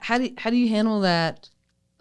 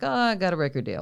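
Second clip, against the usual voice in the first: put-on breezy, flippant, offhand throwaway tone; 2 semitones higher than usual. Quoting back the other speaker's earlier words: imitating a flippant remark. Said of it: "you said it very, like, flippantly".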